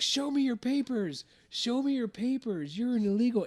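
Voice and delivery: shrill, very high, accusing shout. Retelling a lady confronting a landscaper: imitating a woman shouting. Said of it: "with the way she was shouting it".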